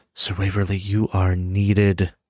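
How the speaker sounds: whispering. A figure comes up to Sir Waverly in the game, whispering into his ear. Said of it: "he's like whispering into his ear".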